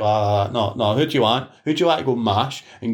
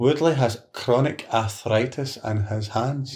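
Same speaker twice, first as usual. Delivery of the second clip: very slow, each word deliberate and careful; 3 dB quieter than usual. Asked to try the sentence again, repeating it slowly. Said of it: "you said that slow".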